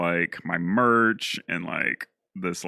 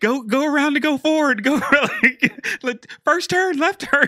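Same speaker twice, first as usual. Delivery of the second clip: put-on very high, twangy-sweet, bossy Southern accent; 4 dB louder than usual. Retelling a friend navigating a drive: imitating a friend with a Southern accent. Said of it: "I like how you gave me a Southern accent".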